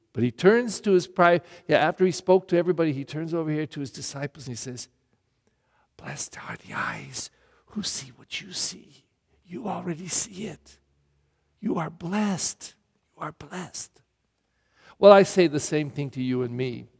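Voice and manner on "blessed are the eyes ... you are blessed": soft, unvoiced whisper. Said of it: "I was gonna whisper".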